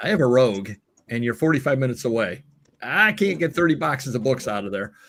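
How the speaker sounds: ordinary talk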